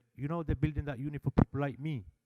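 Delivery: ordinary delivery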